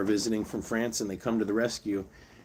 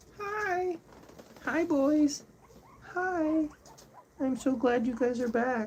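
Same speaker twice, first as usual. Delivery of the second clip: very high-pitched, sweet, tender tone. Greeting the animals on their return, as the speaker advises: sweet tone. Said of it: "talk to them in a sweet tone".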